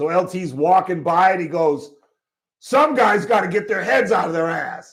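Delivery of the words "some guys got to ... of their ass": play-acted, pointed coach yell. Retelling the classic story of him yelling at l t, retelling a yell. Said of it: "the classic is when he's yelling at L T".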